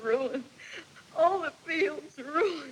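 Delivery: tearful. Asked what she is crying about, [name] answers while crying. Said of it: "What are you crying about?".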